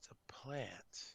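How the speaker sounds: soft, unvoiced dramatic whisper.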